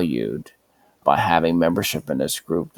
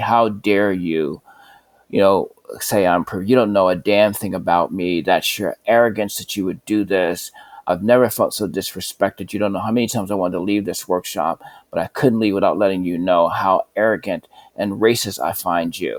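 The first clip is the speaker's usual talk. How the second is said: put-on furious, accusing, angry yelling outburst; 3 semitones higher than usual. Recounting someone at a workshop unloading on them: imitating someone yelling furiously. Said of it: "And she's yelling at me".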